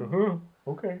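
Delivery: high, nervous voice.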